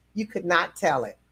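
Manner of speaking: normal talking voice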